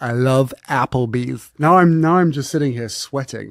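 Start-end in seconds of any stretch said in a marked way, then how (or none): 0.0-1.5 put-on American accent, louder and slower. Asked to try an accent, practicing restaurant lines, american accent attempt. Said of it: "Can you do an American accent?".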